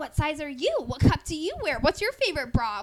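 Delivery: very loud, eager, excited, stoked delivery. Retelling her own questions to a friend as they get excited together, retold stoked eagerness. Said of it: "I'm so fucking stoked".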